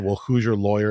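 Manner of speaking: ordinary delivery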